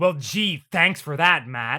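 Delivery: fed-up, irked, really annoyed, irritated tone. Complaining about a dub's phone scene, imitating annoyed TK. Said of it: "he sounds really fucking annoyed about it".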